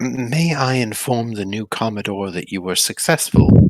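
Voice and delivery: muttered quietly under breath. Voicing a character who speaks to two others as they pass: muttered under his breath. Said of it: "under his breath to Latham and Yodis".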